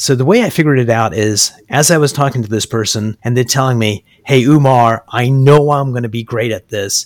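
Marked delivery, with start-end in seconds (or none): 4.3-7.1 put-on powerful voice. Retelling what a client said about succeeding in sales: imitating a powerful voice. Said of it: "they're talking in a powerful voice".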